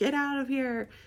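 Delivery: high, flipped-out scream. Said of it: "like, screaming at the dresses".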